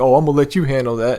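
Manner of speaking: snide, smug, sarcastic, mocking tone. Retelling how a cop handed back the empty bag: imitating a sarcastic cop. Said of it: "sarcastic dickhead".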